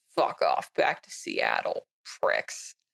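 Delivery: grumble muttered under the breath. Voicing a hunter at a bar table: grumbling under his breath. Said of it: "grumble under his breath".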